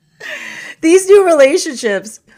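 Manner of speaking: high, loud, hard laughing through the words.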